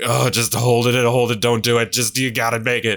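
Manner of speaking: put-on, agonized, pained, pleading, coaxing tone. Retelling holding it in on the walk: retelling words said in agony. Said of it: "in agony".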